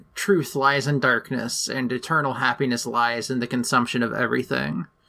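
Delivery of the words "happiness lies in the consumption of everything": ordinary talk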